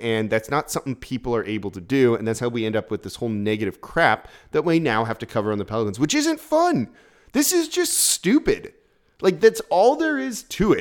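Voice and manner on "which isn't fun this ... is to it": exasperated, annoyed griping, very high-pitched and swooping. Complaining about the negative stuff they now have to cover on the Pelicans, annoyed. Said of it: "You can hear the annoyance in my voice".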